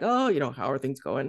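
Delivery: small, grumbly voice, hurried and rushed. Retelling a visit, the speaker imitates the well-respected man in a grumbly little voice. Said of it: "And he's grumbly little voice".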